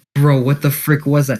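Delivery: ordinary delivery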